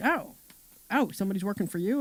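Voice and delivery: surprised, taken-aback, caught-off-guard disbelief. Retelling a man's reaction on learning someone works for her, imitating surprise. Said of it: "he was just very surprised".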